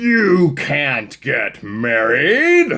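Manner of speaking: very loud, high, spooky storybook villain voice. Reading a story aloud, the stink bug interrupts the friends in a scary voice. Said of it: "said a scary voice".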